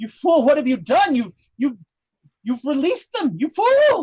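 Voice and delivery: loud, high, furious yell. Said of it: "looks at you and goes".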